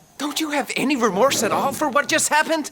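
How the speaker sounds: exasperated, fed up, voice very high. Reading a story aloud, a character asks about remorse: exasperated. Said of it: "Jameson asks, exasperated".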